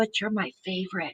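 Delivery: very quiet, soft, half-whispered confiding tone. Relaying what he says, supposed to half-whisper it: half-whispering. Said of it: "I'm supposed to whisper this".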